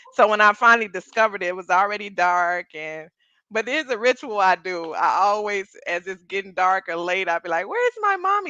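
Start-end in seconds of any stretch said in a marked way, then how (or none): 7.7-8.5 put-on very high, small, lost little-girl voice. Retelling her ritual when lost after dark, imitating a little girl. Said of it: "Like a little girl".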